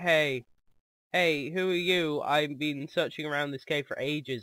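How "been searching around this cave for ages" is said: ordinary talk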